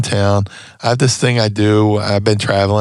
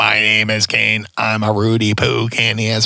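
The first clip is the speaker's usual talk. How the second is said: put-on artificial voice-box sound. Retelling his suggestion that the Rock go out and speak in a Kane fake voice-box voice. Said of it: "do the fake voice box".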